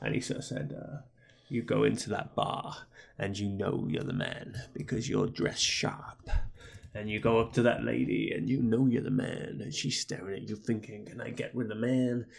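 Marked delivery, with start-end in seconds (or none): 1.5-12.3 put-on creepy whisper, lower and quieter. Retelling a creepy podcast promo: imitating Ric Flair whispering. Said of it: "he sort of whispered quietly into the microphone".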